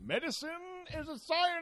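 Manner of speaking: stuffy, authoritative, very high-pitched. Joking about whether doctors are scientists, in an authoritative, stuffy put-on voice. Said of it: "It's my authoritative, stuffy".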